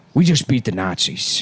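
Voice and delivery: put-on British-sounding voice. Acting out what Ford says about rulers: Ford impression. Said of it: "is that what his real voice is?".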